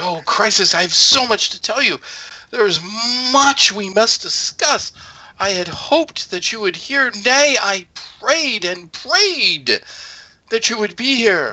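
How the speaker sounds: eager, excited, very high-pitched voice. Voicing Alanu Groff welcoming Crisis to Newcrest, excited Alanu Groff voice. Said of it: "he is uh, actually a bit excited".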